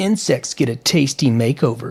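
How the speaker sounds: plain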